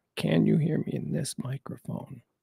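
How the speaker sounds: low, close, hushed whisper. Checking whether listeners can hear through the microphone, whispering. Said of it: "I'm whispering".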